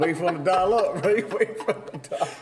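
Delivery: high voice, laughing through the words.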